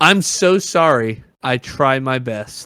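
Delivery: put-on very drawn-out, sugar-sweet, honeyed sarcasm. Retelling her reply to people gossiping about her music: imitating honeyed sarcasm. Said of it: "With honeyed sarcasm".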